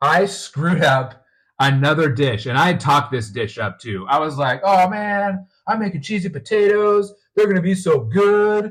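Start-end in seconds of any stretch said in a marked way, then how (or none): 4.6-8.7 smug, self-assured bragging, pitched up. Retelling talking up the cheesy potatoes: imitating own arrogant boasting. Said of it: "I was probably a little arrogant".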